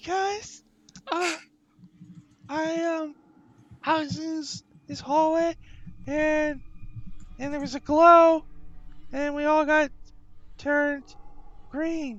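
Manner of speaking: very high-pitched squeaky rat voice. Voicing a rat who answers why it is green: rat voice. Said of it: "So I need a rat voice".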